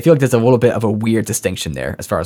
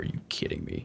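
whispered, serious killer tone. Contrasting the character's ordinary voice with his darker one: imitating Heisenberg's serious killer tone. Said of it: "a serious, like, killer tone".

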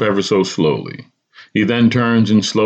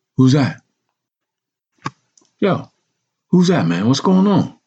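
whispering curiously, higher; 5 semitones higher than usual. Reading a story aloud, voicing a friend asking about a call: curious whisper. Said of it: "He whispers curiously".

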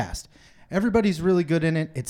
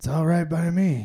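put-on acted, very elderly male voice. Redoing the trailer line for a clean take: Clint Eastwood impression. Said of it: "That's not a good Clint Eastwood".

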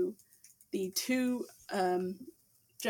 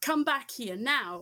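mild stage yell; 4 semitones higher than usual. Voicing a woman in the market calling someone back: yelling. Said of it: "a woman yelling".

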